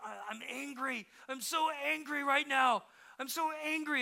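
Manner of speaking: mock tearful child voice. Retelling a child's words while the child fights back tears: imitating a child fighting back tears. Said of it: "fighting back tears".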